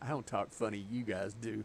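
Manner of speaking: normal talking voice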